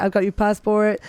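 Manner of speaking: plain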